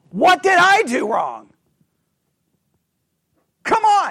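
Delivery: fed-up, exasperated outburst. Speaker explaining a scripture passage acts out God's question with put-on frustration. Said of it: "asking the question almost in a way of just frustration".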